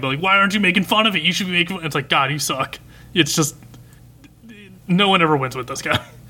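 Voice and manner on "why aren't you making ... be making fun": fast, mildly raised badgering voice. Speaker retelling what a guy started yelling at cool boy, retelling a yell. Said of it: "he starts yelling".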